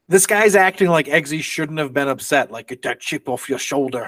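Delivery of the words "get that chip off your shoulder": bad put-on Scottish accent, lower and quieter. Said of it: "or in a Scottish accent, not whatever I just did".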